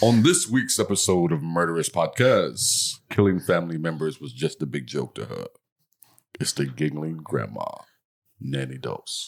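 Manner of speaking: broadcast promo-style TV announcer voice. Redoing the podcast intro after being told: TV announcer voice. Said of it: "sound like a T V announcer".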